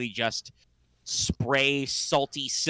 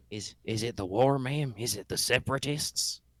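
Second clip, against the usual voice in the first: speaking low and quiet, hushed. A man asks the woman he calls ma'am: low-talking. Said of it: "kind of low talks".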